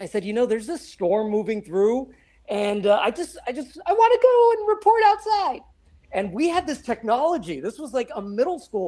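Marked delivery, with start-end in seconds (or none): 0.5-5.6 put-on very squeaky voice, much higher, slower. Speaker recalls asking their middle school advisor, retelling in very squeaky voice. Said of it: "with my very squeaky voice".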